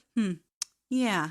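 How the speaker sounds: put-on brushing-off voice. Retelling how he answered her point: imitating a dismissive reply. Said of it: "but it's dismissive".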